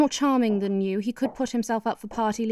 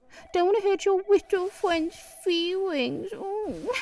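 put-on very high, teasing, cooing baby talk; 10 semitones higher than usual. Teasing someone reluctant to fire their best friend, in baby talk. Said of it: "Don't baby talk me".

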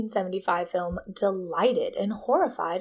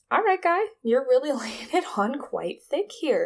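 ordinary talk, nothing marked

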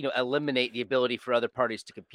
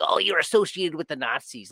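play-acted weird, whiny, complaining tone; 4 semitones higher than usual. Mocking critics who dismiss thinkers by association: imitating a whining voice. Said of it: "in this weird whining".

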